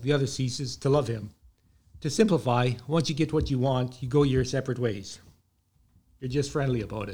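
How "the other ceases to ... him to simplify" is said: usual speaking voice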